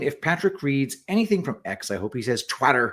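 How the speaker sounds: normal talking voice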